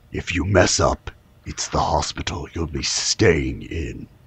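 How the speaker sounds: barely-there, hushed, breathy whisper, very quiet. Voicing a character who warns the players about the hospital: whispering. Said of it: "you hear a whisper".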